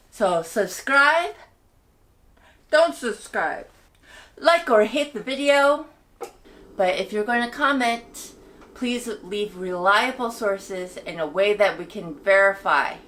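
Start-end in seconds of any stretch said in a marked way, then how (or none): 2.8-5.9 sulky, pouty, emotional. Host ends the video, telling viewers about subscribing and liking: pouty emotional blackmail. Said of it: "*pouty emotional blackmail*".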